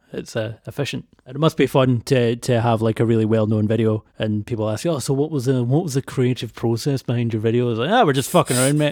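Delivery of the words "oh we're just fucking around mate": casual, laid-on put-on Australian accent. Imagining a video maker asked about the creative process, answering in a put-on accent. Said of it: "In that accent, yes".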